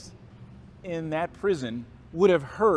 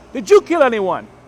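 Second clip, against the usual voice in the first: put-on heavy, thick Nigerian accent, very loud; 6 semitones higher, 13 dB louder than usual. Retell a Baptist minister's next question to you, in Mister Akano's thick Nigerian accent. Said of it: "He has a thick Nigerian accent".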